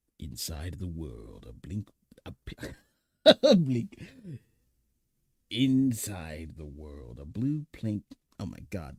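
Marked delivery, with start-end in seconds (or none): 0.2-8.0 grand, booming, very loud, slow epic narrator voice. Playfully doing a line in an epic narrator voice. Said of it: "with an, an epic narrator voice".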